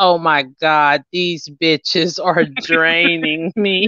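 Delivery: put-on exhausted voice, very slow and dragging. Imitating a friend in the car after a draining day, imitating Tasha sounding exhausted. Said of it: "I can tell when you're exhausted".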